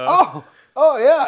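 very high, loud, mock astonished exclamation. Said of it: "sounded just like the way you were imitating Jim Hendry, being so surprised".

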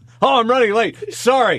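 high, mock-apologetic hero voice.

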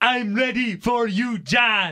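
very slow, loud, taunting, every word stretched. Retelling copying a wrestler's entrance while drunk: Shinsuke Nakamura voice. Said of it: "and then I would say".

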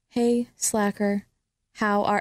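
whispering. Showing how to dictate to a watch: whispering. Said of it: "I'll whisper it".

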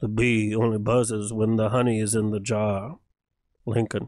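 very deep, low, musing philosophical pitchman voice. Mocking a car commercial's philosophical lines: Matthew McConaughey impression. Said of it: "That was my Matthew McConaughey impression".

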